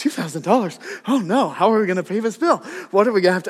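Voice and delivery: frantic, absolutely panicked, near-hyperventilating heavy breathing. Retelling opening a large bill in the kitchen: retelling own panic. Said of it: "I'm panicking, like, absolutely panicked".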